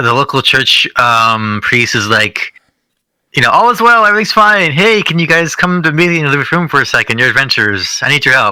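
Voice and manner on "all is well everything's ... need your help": smiley, cheerful, happy-go-lucky, sing-song voice. Retelling a church priest greeting the adventurers: imitating a smiley, happy priest. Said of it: "from a smiley, happy guy".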